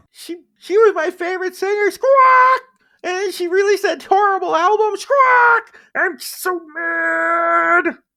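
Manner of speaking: put-on furious bird-creature girl voice. Voicing a small being who answers a player's question: angry squawking bird-girl voice. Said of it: "Whoa. How did she ruin your life? Let's calm down".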